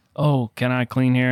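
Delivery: ordinary talk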